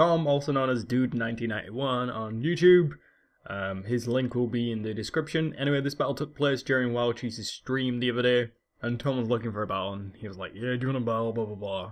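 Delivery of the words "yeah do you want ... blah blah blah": put-on American accent, faster pace. Retelling how a YouTuber asked for a battle on a stream, imitating Tom's American voice. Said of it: "in his American style voice".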